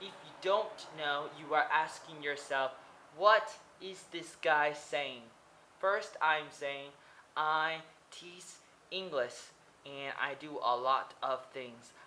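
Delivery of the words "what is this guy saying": usual speaking voice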